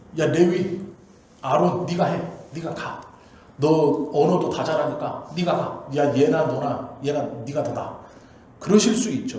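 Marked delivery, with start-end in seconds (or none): 0.2-8.0 loud, truly angry, dismissive voice. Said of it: "진짜 화났으면 이렇게 하는 거예요".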